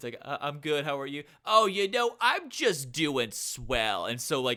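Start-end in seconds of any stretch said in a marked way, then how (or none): 1.4-4.1 put-on Long Island accent, motherly voice. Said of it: "I would kind of do like an impression of her".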